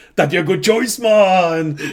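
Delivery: loud, high, stretched-out troll hollering. Retelling a Warcraft Halloween special scene, imitating a yelling troll. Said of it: "The troll just yells".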